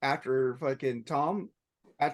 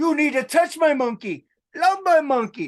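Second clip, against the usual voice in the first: put-on very loud, high, belted German accent; 12 semitones higher, 10 dB louder than usual. Reminding a friend of an old sketch, doing a Dieter German accent impression. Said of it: "He was doing a German accent".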